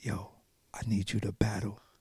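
very quiet, hushed whisper up close. Retelling being called up on stage to battle: imitating Sticks whispering. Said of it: "He whispers in my ear".

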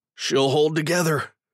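speaking through clenched teeth. Narrating a tight ship maneuver, reader voices a character on the bridge through gritted teeth. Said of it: "Will says through gritted teeth".

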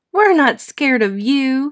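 light laugh through the words. Angelina, not fooled by Spike and Sammy jumping out, answers them: laughing. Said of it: "she laughed".

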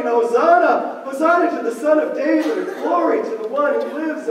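ordinary talk

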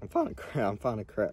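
voice cracking and breaking. Talking to his audience, his voice cracking. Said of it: "Oh, my voice cracked".

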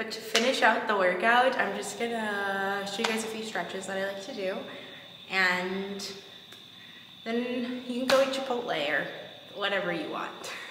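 out of breath between words, winded and drawn-out. Finishing a workout while talking to viewers, out of breath. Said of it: "I'm so out of breath".

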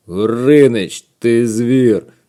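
very loud, grumbled, exclaiming outburst. Complaining to a friend who can't come out today, grumbling. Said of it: "буркнув Вовчик".

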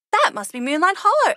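smiling voice. Narrator reads Elsa spotting a village as the sisters walk, smiling. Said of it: "Elsa smiled as they walked forward".

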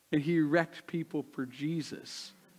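ordinary talk

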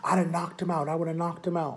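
play-acted, worked-up, furious and heated. Retelling what a furious friend said about the punch: imitating an angry man. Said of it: "He was so angry".

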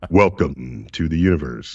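very deep, very low narrator voice. A planetarium director demonstrating how the book's captions were narrated, in planetarium voice. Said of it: "I use my planetarium voice".

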